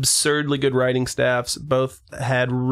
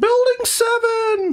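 cartoon mouse voice, pitched very high; 3 dB louder than usual. Telling what a pet cat says, do a Mickey Mouse voice. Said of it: "that's a pretty good Mickey".

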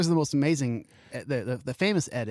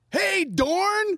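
mock all-excited delivery, pitched very high; 4 dB louder than usual. Retelling a coworker greeting a celebrity: imitating an excited greeting. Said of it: "All excited".

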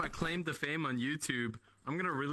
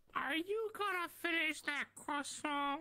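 very high, cartoon-like voice; 13 semitones higher, 3 dB quieter than usual. Talking with others in an online game lobby: voice like Herbert from Family Guy. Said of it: "that sounded like Herbert from Family Guy".

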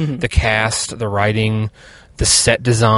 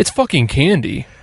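mock annoyed snapping, angry and pitched up; 5 semitones higher than usual. Retelling words heard during a fight over candy: imitating an angry outburst. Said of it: "in that tone".

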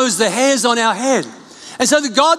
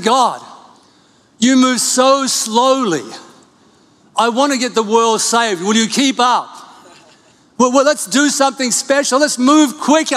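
put-on angry, impatient tone. Retelling own past prayer, complaining that god moves slowly: imitating own angry complaint. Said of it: "Sometimes I get really angry with God".

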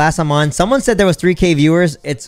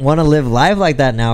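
normal talking voice

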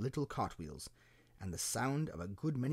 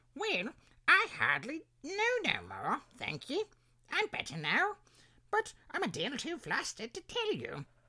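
feeble, very high, swooping squeak; 13 semitones higher, 4 dB louder than usual. Asked what happened to him, Bill answers the others: feeble squeaking Bill voice. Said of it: "a little feeble, squeaking voice".

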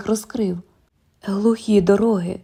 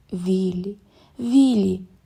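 soft, gentle, soft-spoken tone. Narrator reads a woman replying to a man's plan to walk away, softly. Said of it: "м'яко сказала вона, хитаючи головою".

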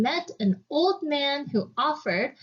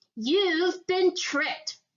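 high, furious, angry cry; 5 semitones higher than usual. Jack's mother, throwing his beans out of the window, crying out furiously. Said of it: "she cried as she threw the beans".

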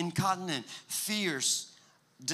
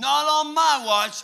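very loud, slow, over-the-top heroic dramatic delivery; 9 semitones higher, 11 dB louder than usual. Retelling a son's line during a toy fight: imitating a dramatic child. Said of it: "he's really dramatic".

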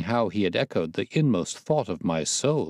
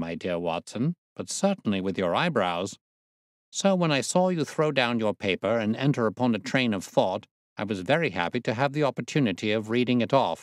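plain

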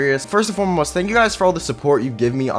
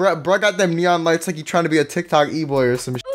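normal talking voice

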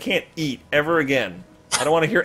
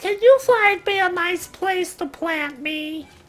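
very high, annoying vegetable creature voice. Speaking as a talking vegetable asking to be planted, in an annoying vegetable voice. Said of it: "these vegetables have really annoying voices".

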